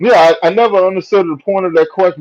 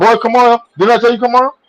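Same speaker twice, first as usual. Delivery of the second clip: imitated impatient tone with raised pitch; 6 semitones higher than usual. Acting out a father calling a slow child to come: imitating an impatient father. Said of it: "And you take too long".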